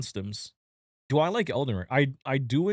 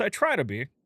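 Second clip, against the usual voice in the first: heavy stress on the word try; 4 semitones higher than usual. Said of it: "Emphasis on the word try".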